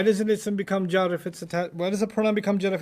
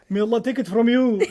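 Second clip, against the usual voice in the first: put-on Egyptian-accented English, higher pitch; 3 semitones higher, 3 dB louder than usual. Retelling what an old lady from the lectures used to say: imitating Egyptian-accented English. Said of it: "she spoke English, but in Egyptian".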